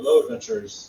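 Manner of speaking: deep gravelly voice. A stranger greets the adventurers, in a deep gravelly voice. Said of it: "Deep, gravelly voice responds".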